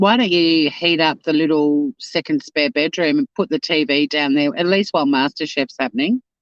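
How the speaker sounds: ordinary talk, nothing marked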